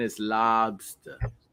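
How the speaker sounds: Boston pronunciation. Teaching another speaker the boston way to say it: boston accent. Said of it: "In Boston".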